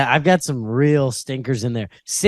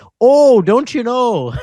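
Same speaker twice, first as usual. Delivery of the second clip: high, drawn-out Minnesota accent; 10 semitones higher, 6 dB louder than usual. Mocking how people imagine Minnesotans sound: stereotyped Minnesota accent. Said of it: "everyone has this concept of Minnesota that's like".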